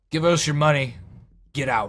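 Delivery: burly, brutish half-orc character voice. Voicing a big burly half-orc who stares down at the player: voicing a big burly half-orc. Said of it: "big, burly half-orc looks to you".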